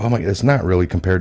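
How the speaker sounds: ordinary talk, nothing marked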